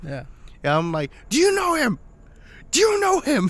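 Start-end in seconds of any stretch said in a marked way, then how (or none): 1.3-3.5 shrill, piercing, very high, frantic scream. Retelling asking people about a buddy who worked at Deja Vu, screaming. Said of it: "I'm screaming one of my buddy's names".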